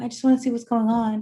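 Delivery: barely audible, very quiet whisper. Showing how not to approach someone screaming, super low whisper. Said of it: "like super low whisper".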